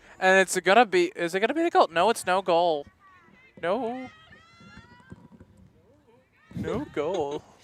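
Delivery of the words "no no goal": breathy voice breaking mid-line. Calling a possible goal as it happens, say there is none with a voice crack. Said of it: "That's a voice crack of mine".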